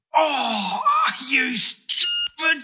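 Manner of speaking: very high-pitched, pained outburst. In a radio ad, a man slips a disc opening his screen door: in pain. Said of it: "what Kyle Smithers says when he slips a disc".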